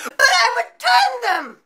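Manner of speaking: annoying, shrill, very high, very slow, drawn-out squeal. Retelling a customer protesting about a return: annoying high-pitched squealing voice. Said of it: "In this annoying, high-pitched, squealing voice".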